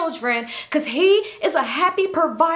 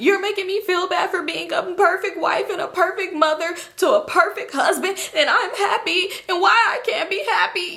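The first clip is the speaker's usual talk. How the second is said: crying, sobbing, wounded and tearful tone. Retelling an argument in which a wife starts crying: imitating a woman crying. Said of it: "So she start crying".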